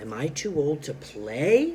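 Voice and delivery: voice climbs at the end on play. Reading a story aloud, a question rising on play. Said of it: "Listen to how my voice goes up at the end".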